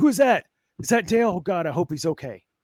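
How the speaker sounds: play-acted, high, choked-up, worried crying announcer voice. Retelling the announcer seeing a crash: imitating emotional announcer. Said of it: "He's getting all emotional".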